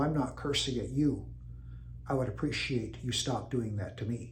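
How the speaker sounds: very quiet voice. Retelling his answer to someone loudly cursing at him, very quiet voice. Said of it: "say in a very quiet voice".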